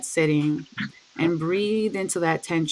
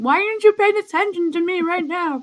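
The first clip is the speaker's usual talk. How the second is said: very high, loud crying dog voice; 12 semitones higher, 5 dB louder than usual. Retelling how the dog wanted attention: imitating a crying dog. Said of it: "she was crying".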